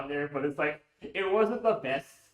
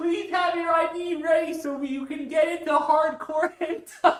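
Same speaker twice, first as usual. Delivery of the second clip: very high, loud, top-of-the-lungs shout; 13 semitones higher, 7 dB louder than usual. Retelling how an organizer called to the line: imitating an organizer yelling.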